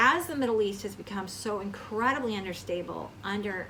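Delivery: ordinary talk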